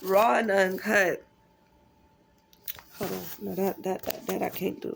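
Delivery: crying while talking, tearful. Speaking to viewers about the biggest breakthrough of their life, crying while talking. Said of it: "Yeah, I'm crying".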